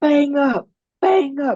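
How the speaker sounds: put-on very high, very slow, drawn-out bellowed yell. Retelling a raid where the team leader yelled: imitating someone yelling. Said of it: "the guy's yelling".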